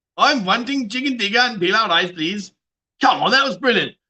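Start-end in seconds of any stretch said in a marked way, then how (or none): 0.2-2.5 comic, put-on Indian English accent. Doing accents for the boys one after another, in an indian accent. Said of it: "That Indian accent was brilliant".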